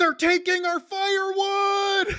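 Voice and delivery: shrill, very high, loud, drawn-out scream. Retelling a prank, the speaker imitates his cousin's line, retelling a scream. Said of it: "And he screams".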